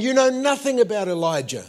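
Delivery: confrontational, in-your-face yelling, high and loud. Recounting a lady yelling in the speaker's face after preaching, retelling her yelling. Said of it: "she's yelling in my face".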